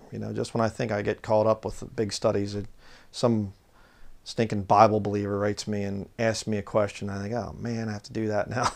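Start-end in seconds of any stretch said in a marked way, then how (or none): 7.3-8.7 sarcastic tone, quieter. Quoting his own thought about answering a question: retelling own sarcastic complaint. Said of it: "Speaking sarcastically".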